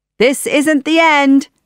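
shouted loudly at a high pitch. Narrator reads Jafar as guards are ordered to take him away; shouted. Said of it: "Jafar shouted".

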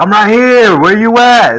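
very high, shrill, loud yell. Retelling calling out while running between doors: imitating own yelling.

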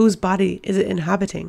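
ordinary delivery

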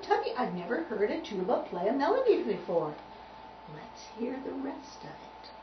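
ordinary delivery

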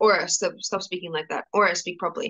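plain

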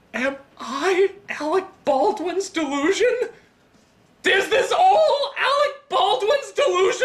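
mock dramatic outcry, high, slow, theatrical wail.

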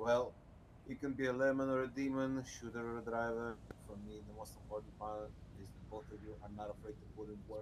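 low, soft-spoken, under-projected delivery. Called on next to speak, he addresses the group, speaking too softly. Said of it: "Speak up".

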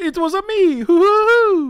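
very high-pitched cartoonish voice. Speaker answers a guess-who question, in a Mario voice. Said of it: "That's Mario from the Mario show".

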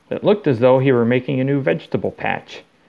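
plain reading voice

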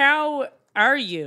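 high-pitched, put-on Central Pennsylvania accent. Greeting a best friend at the start of the show, in a Central Pennsylvania accent. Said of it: "That's me trying my Central Pennsylvania accent".

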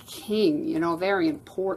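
ordinary delivery

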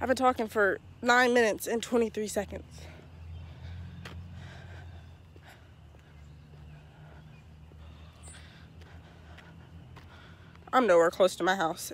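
out of breath. Speaker talking to the audience on the way home, out of breath. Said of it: "I'm already out of breath".

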